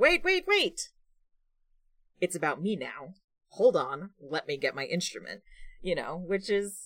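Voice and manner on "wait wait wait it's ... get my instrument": airheaded, animated, swooping dumb bard voice. Describing a favorite role-play character, then voicing a dumb bard. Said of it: "my dumb bard who's like".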